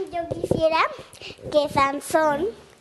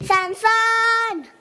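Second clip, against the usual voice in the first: high, loud, sing-song shout. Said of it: "Le grita a sus amigos así".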